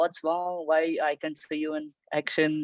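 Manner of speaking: usual speaking voice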